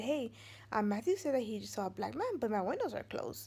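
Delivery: ordinary delivery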